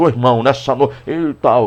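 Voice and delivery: put-on deep, mannish, slow preacher voice. Imitating a woman preaching who tries to talk like a man, in put-on deepened voice. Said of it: "engrossar a voz".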